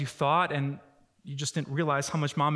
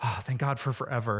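sighed out in relief; 4 semitones lower than usual. Showing two ways to say a phrase, saying it with relief. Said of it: "or with relief".

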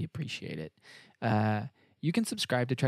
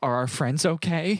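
mock childlike tone, higher and louder; 6 semitones higher, 5 dB louder than usual. Imitating an actress playing the Admiral: imitating a childlike voice. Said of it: "almost childlike".

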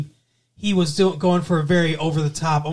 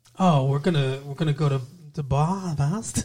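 poor put-on American accent; 4 dB quieter than usual. Speaker mimicking a man who can't get the accent down, doing a bad American accent impression. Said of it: "struggling to get this American accent down".

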